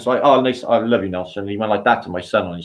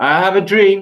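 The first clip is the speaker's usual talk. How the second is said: loud, impassioned, proclaiming delivery; 10 semitones higher, 5 dB louder than usual. Wishing aloud to deliver a famous speech: Martin Luther King speech voice. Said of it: "deliver Martin Luther fucking s-, King's speech".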